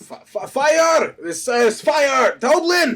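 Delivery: very slow, stammering, high, drawn-out alarmed yell. Warning the inn in character that there is a fire: yelling in character. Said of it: "I'm gonna yell".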